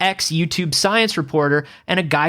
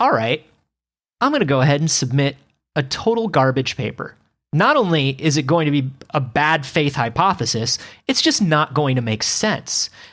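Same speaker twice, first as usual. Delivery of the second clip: usual speaking voice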